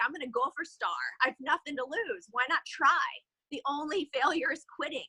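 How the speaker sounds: normal talking voice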